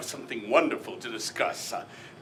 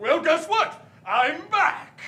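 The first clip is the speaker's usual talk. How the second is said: very high, shrill, high-pitched shouting; 14 semitones higher than usual. Facing the woman who fired you, announcing your return, yelling. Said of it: "Why are you yelling?".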